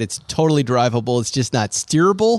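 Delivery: ordinary talk, nothing marked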